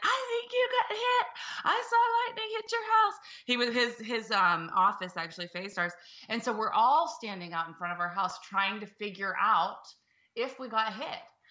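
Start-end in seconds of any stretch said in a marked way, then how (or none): 0.0-3.1 put-on very high, shrill screaming. Retelling how the neighbor ran out after the lightning strike, imitating his screaming. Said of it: "he starts screaming".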